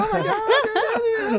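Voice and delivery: play-acted, excited fangirl squeal, very high. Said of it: "like 13-year-old fan girl".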